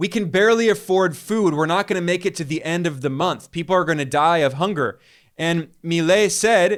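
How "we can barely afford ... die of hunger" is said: ordinary talk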